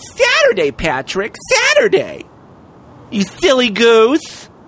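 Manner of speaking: put-on woman's voice with swooping pitch. Speaking to Patrick right after announcing the switch, talking like a woman. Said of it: "I gotta talk like a woman".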